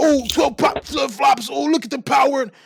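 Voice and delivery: put-on boastful voice, high and loud.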